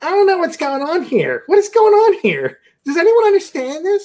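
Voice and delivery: very high, loud, swooping complaining voice. Retelling a movie outing, imitating the mother-in-law sitting distanced away. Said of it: "He sounded just like her".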